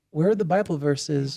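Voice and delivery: ordinary talk, nothing marked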